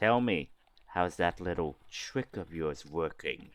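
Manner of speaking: soft, hushed half-whisper. Voicing a character who half-whispers to a player during arm wrestling: half-whispering. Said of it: "whispers to you and say".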